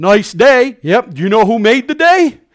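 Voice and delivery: cheesy, mocking, sarcastic, swooping sing-song. Speaker acts out approaching a stranger who is pumping gas; sarcastic. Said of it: "my sarcasm's coming out".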